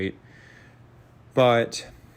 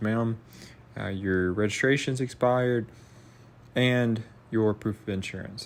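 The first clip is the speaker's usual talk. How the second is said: usual speaking voice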